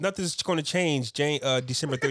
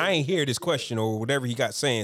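plain

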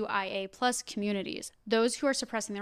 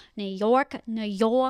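fake, loud, bad, over-the-top New York accent; 5 dB louder than usual. Announcing an event date and venue to listeners, in a bad New York accent. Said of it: "What the fuck was that accent?".

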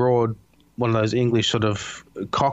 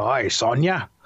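put-on laid-on Australian accent, not gruff. Imitating how Kano is voiced in the newer game: Kano voice in Australian accent. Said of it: "that's a pretty good take".

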